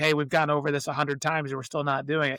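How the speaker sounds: ordinary talk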